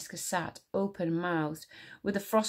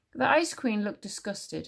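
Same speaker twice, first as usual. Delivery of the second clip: ordinary delivery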